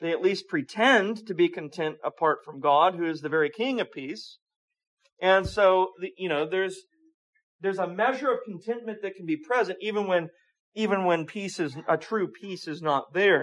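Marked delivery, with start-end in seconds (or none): 0.0-2.9 word pretend said with strong stress. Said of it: "stress the word pretend".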